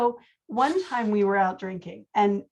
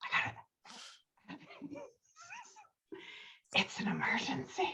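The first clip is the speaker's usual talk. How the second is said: put-on very breathy, near-whispered drunken voice; 14 dB quieter than usual. Retelling a drunk man waking in the Jeep: imitating breathy drunk voice. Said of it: "he gets really breathy".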